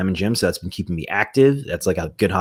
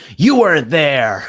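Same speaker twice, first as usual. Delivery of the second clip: put-on loud, high child-like yelling; 8 semitones higher, 7 dB louder than usual. Retelling how a late driver yelled at the speaker, mock child yelling at parents. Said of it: "like a child like yelling at his parents".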